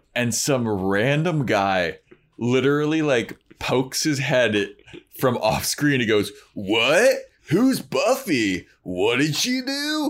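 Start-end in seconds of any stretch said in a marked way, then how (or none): 6.6-10.1 hard California surfer-dude drawl. Retelling a random guy who pokes his head into the scene, hard California surfer accent. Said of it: "he comes in hard Cali".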